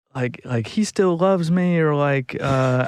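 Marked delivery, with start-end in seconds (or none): 0.7-1.8 put-on, high-pitched, insistent screaming. Retelling a woman at the door at 4 am: imitating a woman screaming. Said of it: "screaming and, like, pounding on the door".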